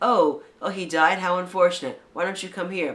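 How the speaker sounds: acted, threatening villain menace. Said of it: "That's a warning. That's a threat".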